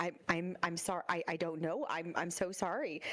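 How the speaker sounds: stammering, stuttering, tearful, close to crying. Playing a student caught unprepared, near tears, stammering tearful apology.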